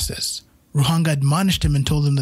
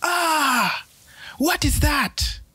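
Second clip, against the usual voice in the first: very high, very slow, furious angry scream; 12 semitones higher than usual. Reading a creation myth, a brother drenched by water: screaming in anger. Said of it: "He screamed in anger".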